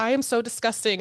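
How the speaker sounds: ordinary delivery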